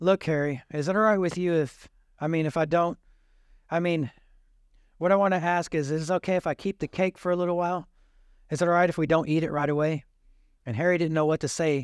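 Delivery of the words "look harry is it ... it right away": normal talking voice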